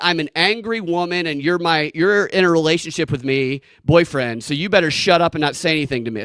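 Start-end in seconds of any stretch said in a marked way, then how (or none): none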